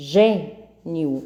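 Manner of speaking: first syllable of gênio stressed, in a changed voice.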